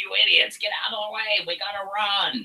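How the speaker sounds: very high, shrill, squeaky, loud goblin voice. Voicing a goblin yelling at others blocking the door: goblin voice. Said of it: "this goblin, as he's approaching, is like".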